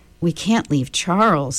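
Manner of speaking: ordinary delivery, nothing marked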